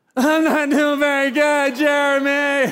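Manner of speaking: mock sobbing, high, loud and drawn-out. Retelling what he told a friend over lunch: retelling his own bawling. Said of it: "I just start bawling".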